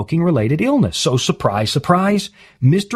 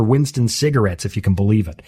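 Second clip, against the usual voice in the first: ordinary talk, nothing marked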